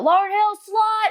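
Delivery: put-on, very high, shrill jeering scream. Retelling how classmates in the school hallway taunted her: imitating classmates screaming an insult. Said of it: "Just screaming at me across the hallway".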